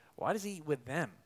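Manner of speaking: haughty, smug, self-satisfied, superior tone. A speaker retelling the Pharisees' question about Jesus, imitating smug Pharisees. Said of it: "you can hear the smugness in their voices".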